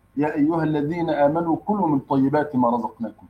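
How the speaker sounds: plain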